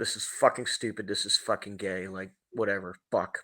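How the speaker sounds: mock mutter under breath. Recalling walking in at sixteen years old, retelling muttering under breath. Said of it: "under my breath".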